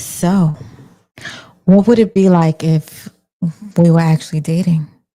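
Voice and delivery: seductive, sultry voice. Acting out a user flirting with an AI companion: seductive voice. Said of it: "I'ma talk in my seductive voice".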